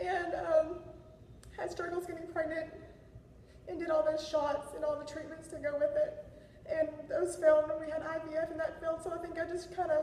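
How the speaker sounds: high-pitched, emotional voice.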